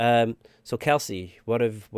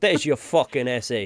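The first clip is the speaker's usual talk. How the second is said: put-on accent mixing Italian, French and Canadian; 3 semitones higher, 4 dB louder than usual. Acting out handing an essay to a teacher, in an Italian-French-Canadian accent. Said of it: "That was my Italian, French, Canadian accent".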